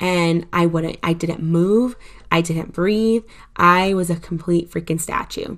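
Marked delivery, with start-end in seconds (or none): none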